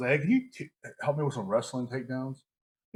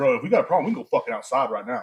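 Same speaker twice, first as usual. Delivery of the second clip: acted-out, aggressive, challenging tone; 6 dB louder than usual. Speaker retells confronting a guy trying to look cool, retelling an aggressive threat. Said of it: "I got a little aggressive".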